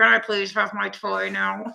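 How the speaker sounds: mock speaking through gritted teeth. Imagining a child asking for a toy, imitating talking through gritted teeth. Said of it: "a little bit of gritted teeth".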